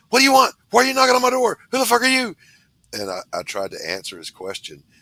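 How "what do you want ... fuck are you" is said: play-acted, very high, loud, hyped-up rapid delivery. Retelling a man who came to the door, imitating someone geeked up. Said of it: "he was all geeked up".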